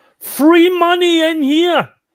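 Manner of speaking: very loud, shrill, high, drawn-out shout. Playing a character calling to people outside the door: shouting to a crowd. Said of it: "I am going to shout to all those people outside".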